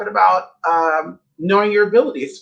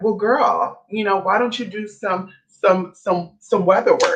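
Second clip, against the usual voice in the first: put-on, needling, dripping with heavy sarcasm. Retelling what she said to the speaker, imitating very sarcastic tone. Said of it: "being very sarcastic".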